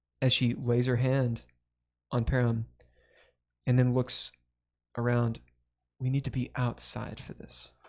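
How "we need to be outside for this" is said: gentle, soft, tender voice. Game master voicing the god Bahamut to the players, Bahamut's tender voice. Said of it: "It's more of a tender voice".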